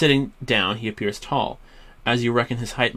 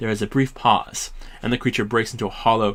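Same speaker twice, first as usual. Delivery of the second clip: normal talking voice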